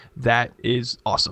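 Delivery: ordinary talk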